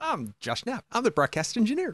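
mock chippy, very high, swooping sing-song. Host repeats his co-host's intro back to him, in a mock-chippy Josh Knapp imitation. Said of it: "You said that very chippy tonight".

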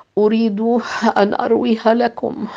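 exhausted murmur. Asked if telling the long story will tire him, he answers; exhausted murmur. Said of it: "بإجهاد شديد ... وهو يغمغم".

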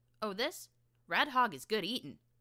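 chirpy, very loud voice. Asked what she is doing with a bloody knife, answering brightly. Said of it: "answered brightly".

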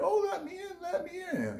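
very high, swooping, calling motherly voice. Warning about demons that mimic familiar voices, acting one out: imitating a mother's voice. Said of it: "it might sound like your mother".

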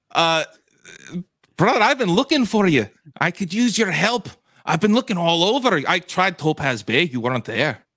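exaggerated cartoon Scottish accent. In a roleplay scene, greeting another character: DuckTales Scottish accent. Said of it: "DuckTales Scottish accent".

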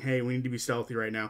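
ordinary delivery

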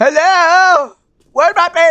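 shouting out. Playing a game at a castle entrance, the streamer yells out. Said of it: "I shouldn't be actually yelling this".

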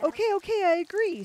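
shrill, very high, loud terrified scream. Narrator reads Joseph as the enchantress's tongue tightens around his leg, screaming in fear. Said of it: "screamed Joseph, afraid for his life".

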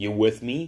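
short, sharp, curt tone. Uncle Press hurrying along a platform, asking the narrator, sharply. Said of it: "he asked sharply".

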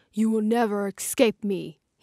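menacing dragon-like growling voice. Narrator voices a large snow dragon appearing over the clearing: growling. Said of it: "he growls".

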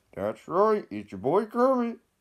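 high, loud squeaky voice. After saying they might make Kermit videos, speaker launches into a Kermit the Frog voice. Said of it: "I don't do his voice good".

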